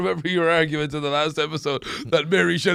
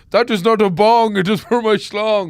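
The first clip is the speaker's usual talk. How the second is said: loud, high-pitched put-on Indian accent; 5 semitones higher, 5 dB louder than usual. Quoting a line from the film Van Wilder: Indian accent. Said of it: "while he perfects his Indian accent".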